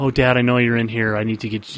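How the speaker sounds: ordinary delivery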